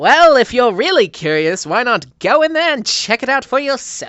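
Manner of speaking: cocky, sarcastic taunting tone. Narrating a character who leans back and replies: cocky. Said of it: "as he cockily says".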